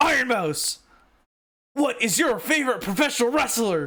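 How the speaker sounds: mock, loud, high shout with rising pitch. Recounting a loud guy who came on and asked her, retelling a really loud question. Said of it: "he said it so loud".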